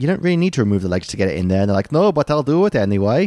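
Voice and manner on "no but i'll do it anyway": put-on slow Swedish accent, pitched up. Retelling what someone said about loading their Volvo, Swedish accent. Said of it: "That was my Swedish accent".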